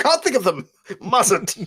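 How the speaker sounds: shrill, high, poor put-on Scottish accent. Retelling what Daz said about owls, in a Scottishy accent. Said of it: "with a Scottishy accent".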